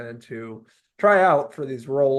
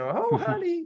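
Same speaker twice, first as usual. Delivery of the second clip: put-on thick, heavy New York accent, very high pitch. Praising an actress's performance, imitating her thick new york accent. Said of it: "I loved her thick New York accent".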